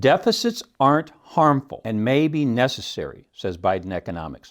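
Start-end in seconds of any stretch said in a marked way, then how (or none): none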